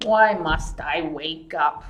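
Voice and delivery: deep, growling, rumbling big-bear voice. Reading a story where Hopper wakes a bear in a cave, in a deep growling bear voice. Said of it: "Growled a deep voice".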